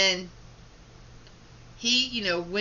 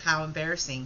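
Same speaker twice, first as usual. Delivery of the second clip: plain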